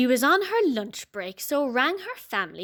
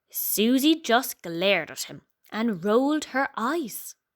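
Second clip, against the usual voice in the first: plain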